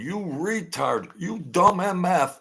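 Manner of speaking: very high, furious, raging shriek. Recounting hearing a man scream at somebody, re-enacting the man screaming. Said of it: "He's screaming".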